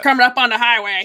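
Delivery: loud typical trucker voice, as over radio. Describing a walkie-talkie heard on one of their episodes, the speaker does a typical trucker voice. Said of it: "it had a typical trucker".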